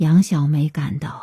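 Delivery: plain reading voice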